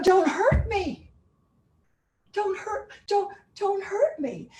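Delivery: small, cutesy little voice, pitched high. Speaker demonstrating a pose with a little tilt, in a cute little voice. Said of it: "I've got a cute little voice".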